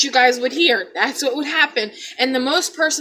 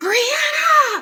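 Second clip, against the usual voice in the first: play-acted very high-pitched scream. Retelling the moment mom screamed from the bathroom, imitating mom screaming. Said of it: "my mom screams and she's like".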